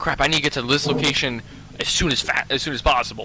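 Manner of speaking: usual speaking voice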